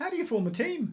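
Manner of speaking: very high-pitched motherly voice. Role-playing with the other speaker, imitating mum's voice. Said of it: "That's my mum's voice".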